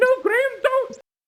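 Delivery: panicked yet excited voice. Warning Graham not to go in: panicked but excited. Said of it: "He sounds so panicked".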